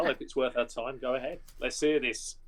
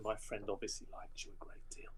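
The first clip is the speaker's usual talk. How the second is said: soft, very quiet, hushed whisper; 4 semitones lower, 13 dB quieter than usual. Telling the bar woman while walking past: whispering. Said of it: "I tell the woman in a sort of a whisper".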